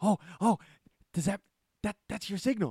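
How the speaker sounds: put-on excited voice. Retelling how he reacts when the bat signal goes off, imitating excited speech. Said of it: "he gets like really excited".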